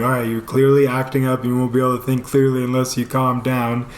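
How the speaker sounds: ordinary talk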